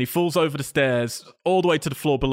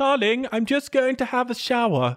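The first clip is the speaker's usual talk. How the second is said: put-on English accent, voice very high; 11 semitones higher than usual. Retelling a film scene, voicing the mother calling out, English accent. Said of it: "Very good English accent".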